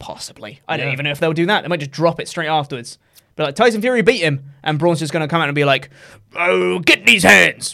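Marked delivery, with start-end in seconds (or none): 6.3-7.7 slow, odd, laid-on put-on Somerset-sounding accent. Predicting how Braun will come out after Tyson Fury beat him: Braun impression, Somerset-sounding accent. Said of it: "What accent was that?".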